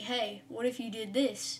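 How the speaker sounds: normal talking voice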